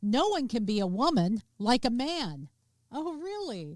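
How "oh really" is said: soft, pitched-up, throwaway sarcastic tone. Reacting to a quote just read aloud, sarcastic. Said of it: "Hopefully you can hear the sarcasm there".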